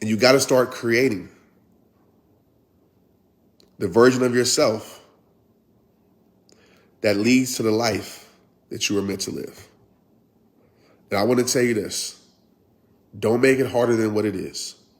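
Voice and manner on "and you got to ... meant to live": calm, steady, unhurried, slowed-down delivery. Speaker wants listeners to really hear this message; calm and slowed down. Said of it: "I'm talking very calm and slowing down".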